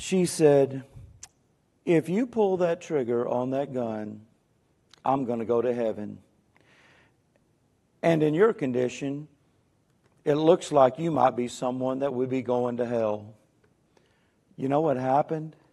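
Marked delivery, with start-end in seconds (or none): 1.8-13.3 mock-calm, put-on calm female voice. Retelling what a woman said to a gunman in her car, retelling a calm woman's words. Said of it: "as calm as she can be".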